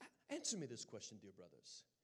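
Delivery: very soft, hushed, lilting put-on British accent. Retelling what Sister Bruce asked him on the quad: imitating a British accent. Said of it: "comes walking up to me with her British accent".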